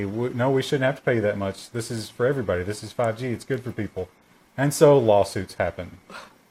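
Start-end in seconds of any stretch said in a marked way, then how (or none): none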